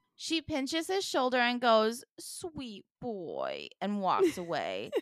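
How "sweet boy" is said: soft, cooing pet-talk voice. Retelling how a woman spoke to Fred, imitating a pet-talk voice. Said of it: "talking to Fred in the exact same like voice, demeanor, cadence, and vocabulary that I speak to my three-legged cat".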